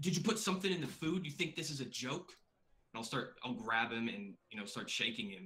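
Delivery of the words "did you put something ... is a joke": furious, angry, high-pitched in-your-face shouting. Voicing an angry character confronting another character: angry yelling. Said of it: "get up in his face and yell at him and say".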